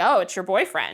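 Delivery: mocking, snide, sarcastic tone. Imagining a man being a sarcastic jerk about a boyfriend: mock-sarcastic tone. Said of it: "being a sarcastic jerk and being like".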